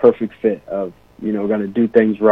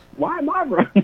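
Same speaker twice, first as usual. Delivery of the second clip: angry complaint, whined way up high. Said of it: "So Deshaun's mad".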